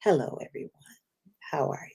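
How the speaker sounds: sultry, soft, quick, breathy whisper. Introducing a woman known on Clubhouse for her voice, imitate Imani's sexy secret whisperer voice. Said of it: "sexy secret whisperer voice".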